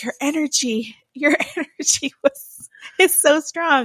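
winded, short of breath. Retelling what a sweating healer said during a cleansing: imitating someone out of breath. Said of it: "getting out of breath".

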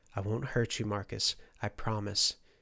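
plain reading voice

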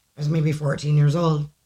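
ordinary talk

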